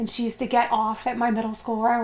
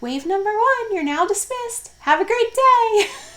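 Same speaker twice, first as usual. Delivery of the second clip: put-on tiny, very high little-girl loudspeaker announcer voice; 11 semitones higher, 5 dB louder than usual. Retelling a little girl's loudspeaker bus announcements: imitating Libby's little voice. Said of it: "you'd hear her little voice on the loudspeaker".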